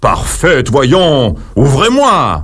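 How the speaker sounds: big, heavy king voice. Narrator reads the king shouting at his daughter's locked door, in a big voice. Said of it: "Le roi crie de sa grosse voix".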